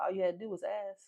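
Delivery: the sweetest tiny, soft little voice. Retelling what he said when she looked to him for help, imitating a sweet little voice. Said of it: "with the sweetest little voice".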